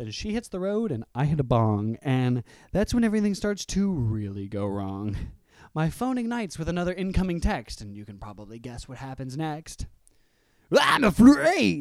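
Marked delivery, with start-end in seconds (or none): 10.8-11.8 shrill, very high, very loud put-on voice. Reading out a text from her in a put-on voice for her. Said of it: "I can't do an impression of her, so that's the voice".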